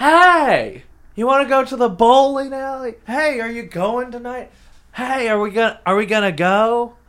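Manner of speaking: cheery, very loud, high happy yelling. Imitating a coworker who shouts invitations to the bowling alley: imitating a happy shout. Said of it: "He's shouting happy".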